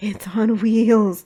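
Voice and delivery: hoarse, hushed, awestruck whisper. Reading a story aloud, a character describing a car: hoarse, awed whisper. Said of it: "he lowered his voice to a hoarse, awed whisper".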